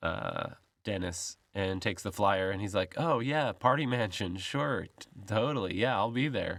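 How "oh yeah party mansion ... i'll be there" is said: condescending, patronizing, humoring brush-off tone. Retelling how a guy brushes off a flyer: imitating a patronizing reply. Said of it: "this guy is obviously just patronizing".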